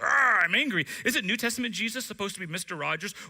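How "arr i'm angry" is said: booming, wrathful growl, very loud. Mocking an Old Testament style Jesus: mock angry Jesus voice. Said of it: "angry and wants to smite people".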